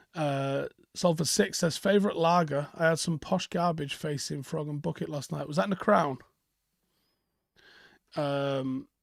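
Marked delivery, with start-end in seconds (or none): none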